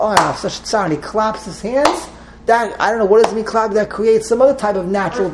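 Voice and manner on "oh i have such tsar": ordinary delivery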